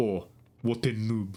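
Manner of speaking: odd put-on French accent, very drawn out. Retelling what a StarCraft player would say, in a weird French accent. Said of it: "kind of like weird French accent".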